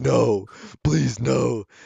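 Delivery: acted-out tearful, near-tears pleading. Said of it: "starting to cry".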